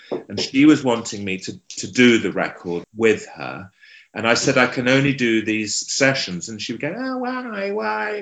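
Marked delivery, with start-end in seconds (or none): 6.9-8.2 very high, squeaky little voice, "why" drawn out. Retelling how a woman asked why he couldn't record with her: imitating a squeaky voice. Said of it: "she had this lovely squeaky voice".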